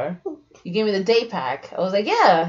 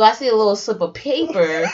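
plain

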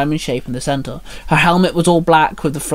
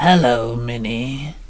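rasping, raspy monster voice; 3 semitones lower than usual. Reading a story aloud, voicing Morgon Noir greeting Minnie, in a raspy voice. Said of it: "he rasped".

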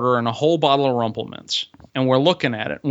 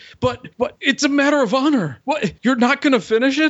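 mock drunken outrage, very high, loud yelling; 12 semitones higher than usual. Recounting screaming at him over a bottle: retelling drunk, mad screaming. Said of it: "super special kind of mad that you can only get when you're really, really drunk".

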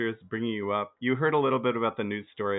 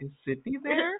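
put-on very high, sweet, polite, harmless-sounding voice. A speaker imagines the killer phoning Mrs. Riley, Ghostface's put-on nice voice. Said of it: "putting on a nice voice to be like".

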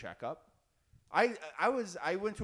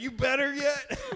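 loud, very high put-on country accent; 10 semitones higher, 6 dB louder than usual. Acting out a friend's dad dunking someone in a bathtub, country accent. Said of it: "I love how I'm giving your dad a country accent".

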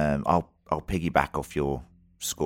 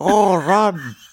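high-pitched, loud, silly zombie voice. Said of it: "that was a zombie watching the show".

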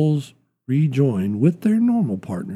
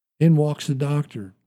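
plain reading voice

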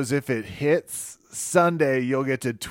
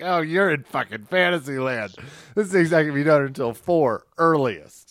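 plain

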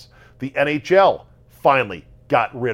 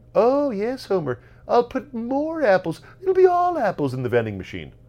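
very high, sing-song, swooping cartoon character voice; 12 semitones higher than usual. Imitating a character answering a complaint about vending-machine apples: Monty Burns voice. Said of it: "like Monty Burns when Homer complains".

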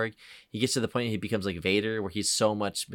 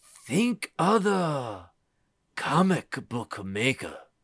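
slow, swooping, put-on old man voice; 5 semitones higher, 3 dB louder than usual.

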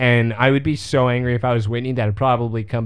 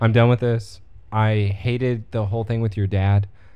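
ordinary delivery

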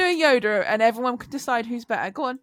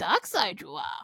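hushed, breathy character voice breathed out in a whisper; 4 semitones lower, 7 dB quieter than usual. Co-hosts talk about Yoda and one quotes him, Yoda voice. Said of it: "He's like".

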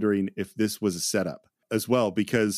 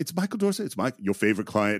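sing-song voice, pitch swooping and bobbing up and down. Retelling a film scene: imitating Dustin Hoffman, voice going up and down. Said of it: "the voice going up and down".

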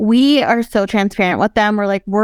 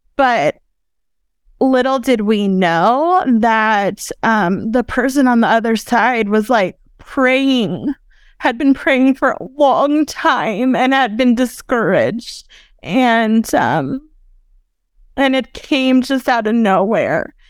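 tearful, teary, moved, emotional voice; 2 semitones higher than usual. Recalling an anonymous donation they made: tearing up. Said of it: "now I'm tearing up".

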